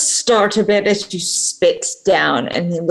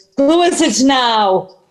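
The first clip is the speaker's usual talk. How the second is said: rather exasperated and fed-up, high-pitched, carrying voice; 5 semitones higher than usual. A game master voices someone answering a knock through the door, exasperated. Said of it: "sounding rather exasperated that says".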